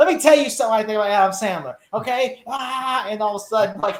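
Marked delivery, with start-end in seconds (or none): 0.0-2.4 furious, worked-up ranting, on a roll. Imitating Matt ranting about Adam Sandler: imitating Matt on a tirade. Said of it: "Matt must have been on such a tirade".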